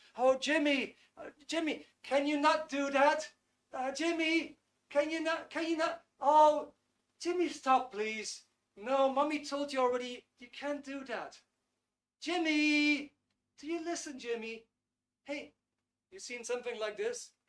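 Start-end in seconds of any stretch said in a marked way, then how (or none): 0.2-14.7 doubtful, halting, slow, high motherly voice. Speaker demonstrates a mother talking to her toddler Jimmy: imitating a hesitant mother. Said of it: "sounds a bit hesitant".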